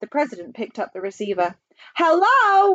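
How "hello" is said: full-throated, high yelling shout. The president picks up the receiver again after a failed call; yelled. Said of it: "he yelled".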